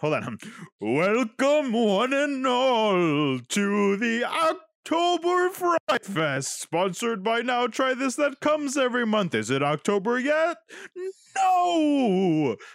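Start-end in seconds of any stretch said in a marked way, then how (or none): 0.0-9.4 eerie, ghostly, spooky voice, words stretched out. Speaker welcomes everyone to the october friday fest in a spooky voice. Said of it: "oh, spooky voice".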